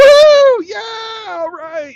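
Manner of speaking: put-on drawn-out whooping cheer, very high, very loud. Telling a joke, acting out Canadians cheering in a frozen hell: whooping it up. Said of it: "they're just whooping it up".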